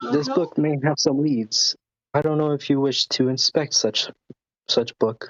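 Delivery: unruffled, composed, calm and quick. Speaking in character in a tabletop game, handing over a found book, calm. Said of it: "she / I just calmly say".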